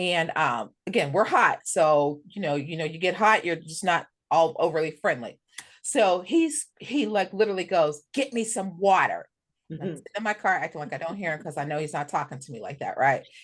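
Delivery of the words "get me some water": put-on curt, gruff, abrupt tone, said slowly. Retelling a man on a corner demanding water, retelling an abrupt gruff order. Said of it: "And like very abrupt, very gruff".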